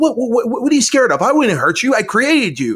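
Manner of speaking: very high, swooping, exasperated frustrated outburst. Reenacting a film scene where a creature recoils, acting out frustrated outburst. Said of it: "getting frustrated at the fact that the".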